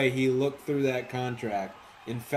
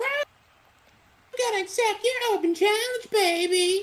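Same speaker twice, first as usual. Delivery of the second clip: put-on voice, higher pitch; 3 dB louder than usual. Retelling a challenger accepting the open challenge: Oily impression. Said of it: "That's a pretty good Oily impression".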